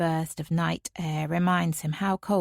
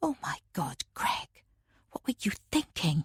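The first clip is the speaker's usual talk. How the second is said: hushed whisper under the breath; 3 semitones higher, 4 dB quieter than usual. Reading a story aloud, the mother speaking after danger passes: whispering. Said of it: "She's whispering now".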